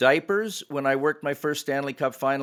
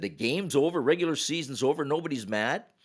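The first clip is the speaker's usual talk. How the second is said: ordinary talk, nothing marked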